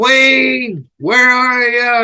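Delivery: very slow, high, stretched-out calling yell. Retelling someone calling from across the backstage area: imitating someone screaming.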